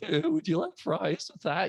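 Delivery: put-on cracking, crackly voice like a scrawny young teen. Imitating own younger self as a junior-high kid: crackly junior-high kid voice. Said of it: "scrawny little kid in junior high with a crackly voice".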